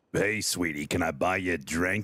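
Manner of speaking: cougar impression. Showing the others an impersonation of a cougar: imitating a cougar. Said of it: "impersonation of a cougar".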